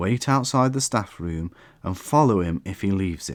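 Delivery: ordinary delivery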